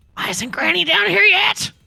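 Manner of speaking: very high theatrical stage whisper. Playing a character who stage-whispers to another character, stage whisper. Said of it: "stage whispers to the other one".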